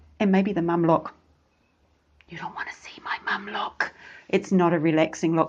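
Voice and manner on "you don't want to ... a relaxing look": displeased whisper, quieter. Showing how a parent turns to the back seat: displeased mum whisper. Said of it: "That was my mum is not pleased whisper".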